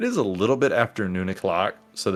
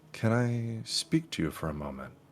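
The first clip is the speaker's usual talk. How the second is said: hushed, quiet, low-key, private-sounding; 3 semitones higher, 8 dB quieter than usual. Narrating a character holding up a hand to stop another, speaking quietly. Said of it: "quietly say".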